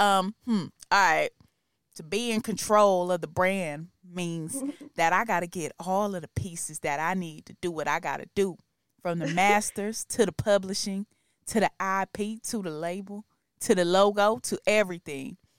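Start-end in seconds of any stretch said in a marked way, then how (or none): 2.0-15.3 laid-on, put-on West Coast accent. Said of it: "let me try to do my my West Coast [name] voice".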